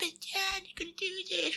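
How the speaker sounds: tiny, soft, very high squeaky voice. Retelling what someone said to John after thirty minutes: squeaky voice. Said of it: "It's like a fucking squeaky ass voice".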